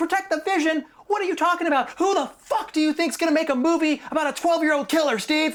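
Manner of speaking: very high, enraged, furious screaming rant. Recounting how he was yelled at over the movie, retelling a furious scream. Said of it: "Just kept screaming".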